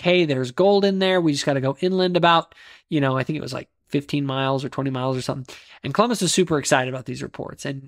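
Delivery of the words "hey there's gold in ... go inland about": plain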